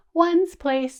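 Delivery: shrunk-down small little voice. Leading listeners in saying place values with their hands, small voice. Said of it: "my voice a little bit smaller".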